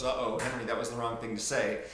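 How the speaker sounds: ordinary talk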